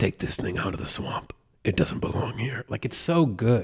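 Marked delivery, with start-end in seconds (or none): 0.0-2.6 rasping, eerie whispered voice. Imitating the voice on the show: Swamp Thing voice. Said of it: "When he says".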